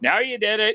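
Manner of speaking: high, shouted battle yell. Playing a character who shouts at the enemies: yelling at enemies. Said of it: "I'm just gonna ye-, yell out".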